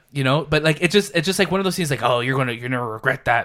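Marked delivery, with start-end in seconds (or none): 2.1-3.5 put-on old curmudgeon voice. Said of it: "That was a good Clint Eastwood".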